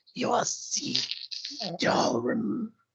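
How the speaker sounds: staticky voice like a fuzzy television. Speaker doing a man's voice after saying he can: staticky tv voice. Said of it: "Like a T V. Like a static".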